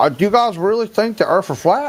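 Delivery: very high, dopey dumb-guy idiot voice. Asking the group a question in a put-on idiot voice. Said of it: "the idiot voice".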